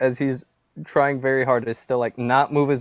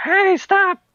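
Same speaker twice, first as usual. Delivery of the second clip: very high, shrill yelled scream; 4 dB louder than usual. Game master voices a familiar voice yelling at the party at night, screaming out. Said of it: "who screams out like".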